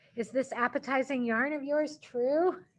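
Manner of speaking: ordinary delivery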